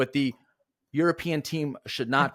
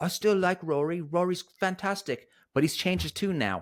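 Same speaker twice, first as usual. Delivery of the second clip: fake British accent, high pitched; 5 semitones higher than usual. Host recalls a chat user's view of rory, in a put-on british accent. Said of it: "I did my British accent of".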